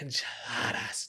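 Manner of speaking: mock, playful, silly, breathy whispered voice. Retelling telling her kids about dinner, a silly voice on 'enchiladas'. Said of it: "I just said it really silly".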